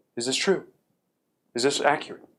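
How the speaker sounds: mock grave, severe and stern delivery. Retelling how Bill came up and questioned the speaker's note, imitating Bill's stern voice. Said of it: "In a very stern, serious voice".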